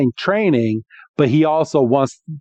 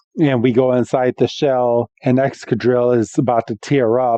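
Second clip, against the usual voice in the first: usual speaking voice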